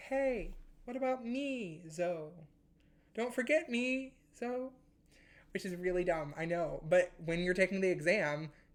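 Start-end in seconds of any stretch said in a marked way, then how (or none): 0.0-4.7 high, slow, small, sad puppy voice. Explaining a chirality check before an exam, voicing a puppy in a put-on sad little puppy voice. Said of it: "like a sad little puppy being like".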